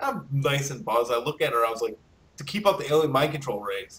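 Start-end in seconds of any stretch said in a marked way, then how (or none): 2.4-4.0 put-on dead-serious, dry deadpan delivery. At a bar, answering a girl's question: retelling a deadpan line. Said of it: "It's a deadpan".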